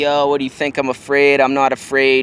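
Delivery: ordinary talk, nothing marked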